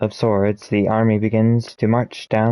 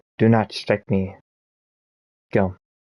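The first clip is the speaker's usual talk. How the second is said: icy, cold, authoritative and commanding tone. Narrating a fight, a man with a circlet orders the attacker in a cold commanding voice. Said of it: "says in cold, commanding voice".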